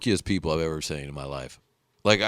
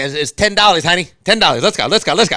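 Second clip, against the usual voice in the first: high, loud cartoon voice, pitched up and pushed; 9 semitones higher, 8 dB louder than usual. Retelling a man in a costume who fleeced a family, doing his SpongeBob voice. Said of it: "I guess SpongeBob in the cartoon talks like this".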